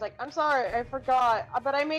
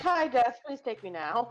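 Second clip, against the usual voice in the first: put-on embarrassed voice, pitched lower; 3 semitones lower than usual. Acting out Jelly feeling embarrassed after the parents knew: imitating embarrassed Jelly.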